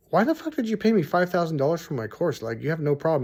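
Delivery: ordinary delivery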